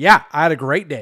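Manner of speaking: loud, hostile, combative, aggressive tone. Answering a simple random question to show a tone: aggressive tone. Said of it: "aggressive, right?".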